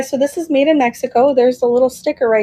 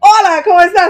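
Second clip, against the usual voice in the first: smooth, practised, loud, high put-on Latin American Spanish accent; 6 semitones higher, 5 dB louder than usual. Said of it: "I could do the accent so well".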